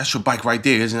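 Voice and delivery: ordinary talk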